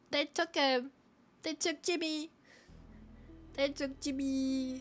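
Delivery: crying, blubbering, tearful little pig voice. Voicing a pig telling that another pig was taken: crying pig voice. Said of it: "And the pig starts crying like".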